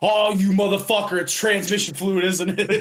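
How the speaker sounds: play-acted, very high, panicked freak-out outburst. Laughing while retelling how a man reacted, imitating him freaking out. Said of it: "I start laughing because he's fucking freaking out".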